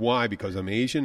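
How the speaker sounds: usual speaking voice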